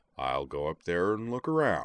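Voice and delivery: ordinary delivery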